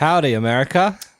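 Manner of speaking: American accent for show. Two hosts greeting an American audience, in an American accent. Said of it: "are we ra- being racist by doing American accents?".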